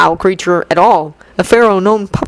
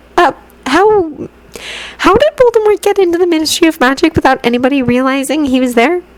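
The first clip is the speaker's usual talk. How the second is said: somewhat scared tone, pitched higher; 9 semitones higher than usual. Reading a character asking how an intruder got in: rather frightened voice. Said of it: "said Hermione in a rather frightened voice".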